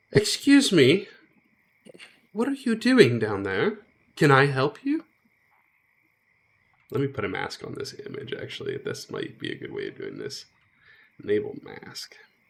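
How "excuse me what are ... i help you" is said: kind, tender, gentle, swooping high elf woman voice. Voicing an elf woman who finds someone on the riverbed: kind, tender elf woman voice. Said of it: "she seems really kind and tender".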